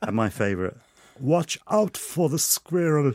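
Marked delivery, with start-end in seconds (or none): 1.2-3.1 uncanny sat-nav voice, slightly higher pitched. Reading out lines for a Werner Herzog sat nav: Werner Herzog voice. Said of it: "It's uncanny".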